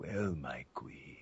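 low, hushed speech while drawing breath in. Demonstrating the voice used for Vamp, Vamp voice, talking on inhale. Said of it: "I'm mostly talking on the inhale instead of on the exhale".

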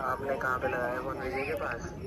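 very soft, low mumbling voice.

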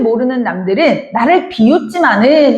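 ordinary delivery

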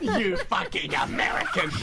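loud, laughing, mocking jabbing tone.

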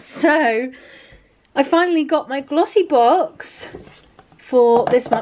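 slow, breathless, winded, out-of-breath speech. Speaker introducing this month's glossy box to viewers; out of breath. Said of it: "I'm also really out of breath".

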